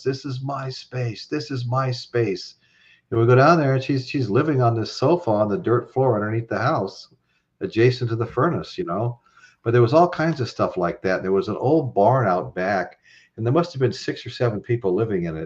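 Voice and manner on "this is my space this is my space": woman's slow, drawn-out, half-shouted mild scream. Retelling how a tenant in a basement screamed at the crew: imitating a woman screaming. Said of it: "this lady starts screaming at us".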